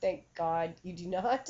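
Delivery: normal talking voice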